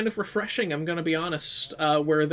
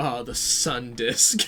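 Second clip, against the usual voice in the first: mock very slow, fed-up, exasperated drawl; 4 semitones lower than usual. Imitating everyone saying the sun disk: imitating an exasperated voice. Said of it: "say in an exasperated voice".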